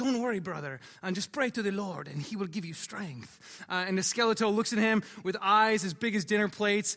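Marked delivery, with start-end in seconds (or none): 0.0-3.4 put-on intentionally terrible Mexican accent. Retelling a scene where Nacho grabs his friend, terrible Mexican accent. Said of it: "intentionally terrible Mexican accent".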